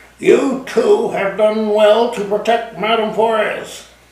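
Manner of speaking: hissed through clenched teeth. The phantom answers the narrator after his laughter, hissed through clenched teeth. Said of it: "he hissed through clenched teeth".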